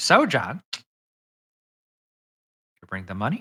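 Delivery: smug, self-satisfied, cocky, sing-song taunting tone. Voicing a halfling rogue who asks a player for money: cocky halfling rogue. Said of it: "this just cocky, shit-eating grin".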